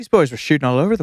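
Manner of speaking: put-on speaking with an Irish accent. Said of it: "Can you do a [name] accent?".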